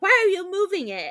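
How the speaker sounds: high-pitched woman's yelling. Retelling a seance scene where a neighbor yells at Mallory: imitating someone yelling. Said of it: "yelling at her".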